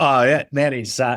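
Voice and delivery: put-on Australian accent. Splitting accents with the other speaker and taking Australian: Australian accent.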